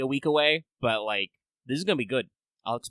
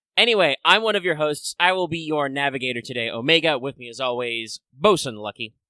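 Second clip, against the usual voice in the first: ordinary delivery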